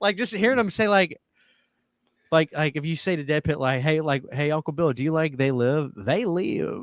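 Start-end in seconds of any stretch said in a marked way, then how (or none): 4.3-6.8 put-on sing-song Kentucky accent, slower. Describing how people from Kentucky talk and quoting them, up-and-down Kentucky accent. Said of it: "It's got an up and down thing".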